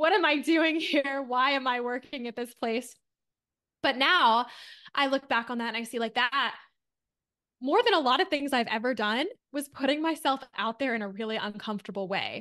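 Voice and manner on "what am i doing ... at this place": tearful, despairing outburst of crying. Retelling a tearful phone call to her then-fiance: imitating her past crying call. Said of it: "I called him just, like, crying".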